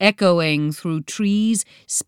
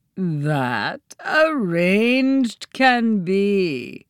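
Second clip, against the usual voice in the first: half-mocking, teasing tone, drawn-out "be". Narrating a hidden voice answering Joe's demand to show itself: half-mocking tone. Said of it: "said the voice in a half-mocking tone".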